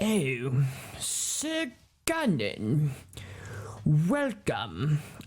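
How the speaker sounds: really nasty, menacing snarling voice. Game master voicing the Duke greeting Sir Gunnan, with a really bad snarl. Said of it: "he has like a really, really bad snarl".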